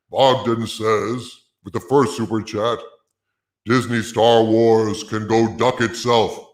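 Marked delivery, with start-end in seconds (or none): 3.7-6.4 put-on voice sounding as if behind a helmet. Reading a viewer's super chat aloud, in a put-on helmeted voice. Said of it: "I'm going to read them in my helmeted voice".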